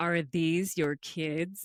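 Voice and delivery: low, unsettling, creepy voice. Retelling how a guy walked up and asked about the speaker's kids, imitating Walter's creepy voice. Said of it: "And in this creepy voice".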